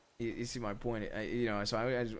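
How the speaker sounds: ordinary delivery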